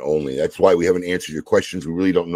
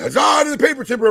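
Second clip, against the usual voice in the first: loud shout, pitched way up high. Retelling what the guy at the concession stand shouted: imitating someone shouting. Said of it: "he's literally shouting".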